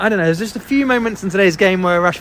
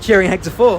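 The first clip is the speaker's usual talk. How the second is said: plain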